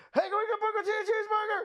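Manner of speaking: put-on shrill, very high yell. Retelling how the guy turned and called into the kitchen: retelling a yell to the kitchen. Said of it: "turns and yells in the kitchen like".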